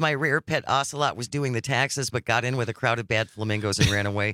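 plain

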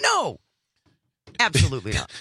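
flat, snapped-out mock lawyer voice. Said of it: "I would assume that Trump's lawyers would say".

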